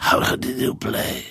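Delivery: rough, croaky, raspy, hoarse voice. Retelling how a man put down his trumpet and came over to ask, imitating a raspy voice. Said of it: "pytał tym swoim chrapliwym głosem".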